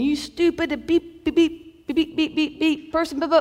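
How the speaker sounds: high, mock screamed angry tirade full of beeps. Recalling a truck driver pulling up beside their car, the speaker retells his screaming. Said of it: "he is just screaming".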